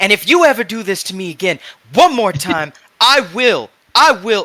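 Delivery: angry scolding tone. Voicing Chocolat in the med bay scolding Luke: angrily scolding. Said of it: "Chocolat tearing Luke just an absolute new one".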